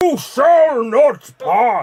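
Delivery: booming, high wizard voice bellowed at full volume. In a movie-quote guessing game, giving a quote for others to name: Gandalf impression.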